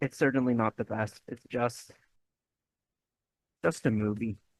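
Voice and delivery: deflated, disappointed, let-down tone. Reviewing a Gladiator legacy sequel, the speaker sounds disappointed. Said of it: "I know I sound really disappointed".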